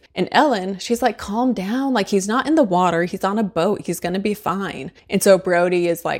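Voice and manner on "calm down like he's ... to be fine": ordinary talk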